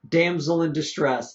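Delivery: ordinary delivery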